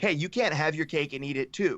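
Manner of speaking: usual speaking voice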